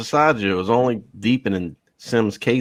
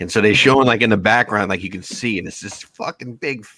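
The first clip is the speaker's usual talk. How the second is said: ordinary delivery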